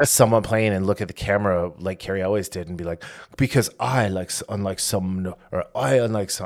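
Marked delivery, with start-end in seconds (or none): 3.4-6.5 poor put-on French accent. Joking through a Mel Brooks-style Napoleon parody: bad French accent. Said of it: "I can't do a French accent".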